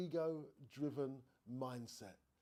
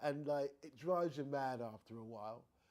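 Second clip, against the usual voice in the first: ordinary delivery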